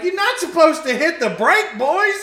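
put-on cackling through the words, very high and loud. Retelling what he said after the car spun out, imitating him laughing while talking. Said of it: "And he's laughing".

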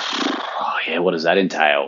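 put-on skeptical, doubtful tone. Retelling a question put to the doctor about medication: imitating own skeptical question. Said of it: "I sort of skeptically said".

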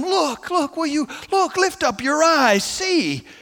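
earnest, urgent pleading. A speaker retelling a plea to the disciples, acting it out: acting out urgent pleading. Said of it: "Hear Him now urgently pleading with them".

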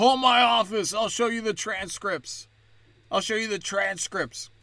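mock childish outburst, held in check. Mocking a politician's speech, imitating Biden yelling like a kid. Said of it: "he yells like a kid".

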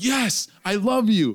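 mock high, loud, drawn-out scream. Telling a story about finding the cat under the bed, retelling a scream. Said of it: "I screamed out".

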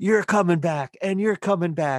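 put-on very high, shrill, loud drunken hollering. Retelling how a drunk Super Bowl winning coach ran on stage, imitating the drunk coach yelling. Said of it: "he's yelling".

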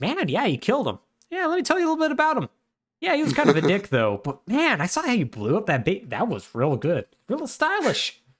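put-on teasing tone. Retelling how Pagan calls Ajay after a kill, imitating Pagan's mocking tone. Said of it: "in a slightly mocking tone".

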